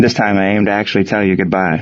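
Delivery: ordinary delivery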